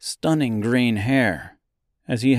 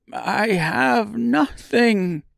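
frail, cracking, very high voice; 11 semitones higher than usual. Narrator voicing a man answering a guard, in a frail, cracking voice. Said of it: "In a frail, cracking voice, he quietly let out".

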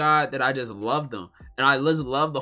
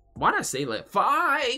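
cracking, very high, drawn-out voice; 10 semitones higher than usual. Wondering aloud why you said a number that way, voice cracking. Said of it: "Like my voice is cracked".

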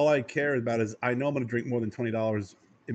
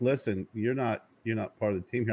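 ordinary delivery

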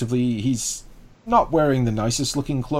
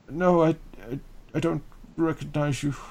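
put-on slightly slurred drunk voice, higher and quieter; 3 semitones higher, 5 dB quieter than usual. Narrator voicing a poor, drunk farmer who answers the listener, drunk, slightly slurring words. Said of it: "He's kind of slurring his words a tad".

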